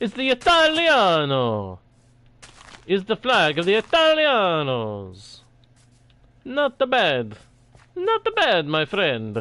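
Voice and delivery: fake Italian accent, laid on thick, swooping. Joking about a flag while playing: put-on Italian accent. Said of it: "What do you think of my Italian accent?".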